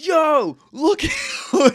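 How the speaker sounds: loud, high, swooping, straight-up screaming. Retelling warning two guys ahead in the lift line: retelling own yell. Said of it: "I'm yelling".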